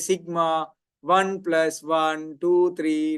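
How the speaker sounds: slow, word-by-word machine read-out. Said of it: "It'll say".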